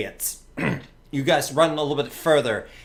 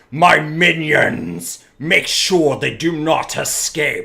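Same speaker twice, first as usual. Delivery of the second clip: slow, booming, roaring monster creature voice; 7 dB louder than usual. Voicing the Dracolich chasing the party: roaring creature voice. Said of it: "you hear this roar, and it says".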